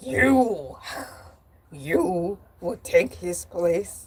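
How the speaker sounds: deep, slow, drawn-out fairy-tale creature voice. Retelling a scene from Beauty and the Beast: imitating the Beast. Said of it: "And the Beast was like".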